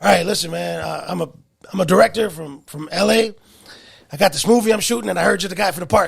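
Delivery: rough, raspy, creaky voice. Retelling a phone call from a movie director: imitating the director's raspy voice. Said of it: "Is that his voice?".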